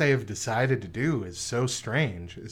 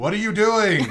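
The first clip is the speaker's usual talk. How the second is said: put-on yelling voice, higher pitched and louder; 10 semitones higher, 8 dB louder than usual. Retelling a commentator yelling at a wrestler in an empty arena: imitating Triple H yelling. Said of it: "Triple H from the announcer's desk is just yelling".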